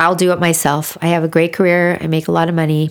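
ordinary talk, nothing marked

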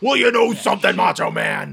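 loud, rough wrestler promo voice. Imagining a wrestler cutting a promo instead of acting: Hulk Hogan promo voice. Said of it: "Just cut a promo".

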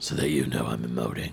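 low, throaty put-on voice. Mocking an actor's serious-scene delivery: Nathan Fillion low throaty voice. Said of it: "Sorry. Acting".

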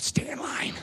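put-on hushed, urgent, breathy scream in a whisper. Retelling how someone in a vision screamed at the others: imitating a scream. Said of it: "he screamed out".

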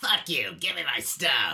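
loud voice in a smoker's rasp. Act out a customer demanding their product, imitating a Karen with a smoker voice. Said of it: "It's always a Karen with a smoker voice".

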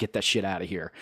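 plain

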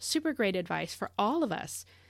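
plain

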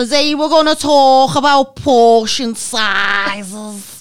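put-on very thick Scouse accent, "sizes" stretched out. Quoting the Weight Watchers leader to her group, imitating very thick Scouse accent. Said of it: "she was so Scouse, she sounded Welsh".

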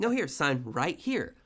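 fake-nice, falsely pleasant coaxing tone. Retelling someone steering a man to sign a contract: imitating fake niceness. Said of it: "fake nice".

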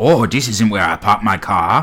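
put-on North Korean accent. Retelling how tunnelers surfaced inside a McDonald's, the speaker voices them in a mock North Korean accent. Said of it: "that's my North Korean voice".

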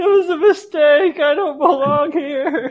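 very high, loud, drawn-out blubbering sobbing wail. Retelling feeling out of place while others stared, imitating own crying. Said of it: "I was just crying".

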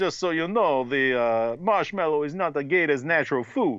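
put-on Russian accent, tour guide style. Retelling what a swamp tour guide said: imitating tour guide, Russian-sounding accent. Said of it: "is this guy Russian?".

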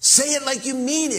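put-on very high, urging preacher's yell. Retelling a preacher urging his congregation to repeat a line, retelling a preacher's yell. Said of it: "he's yelling now".

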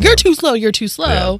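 yelling. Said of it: "who's he's yelling at".

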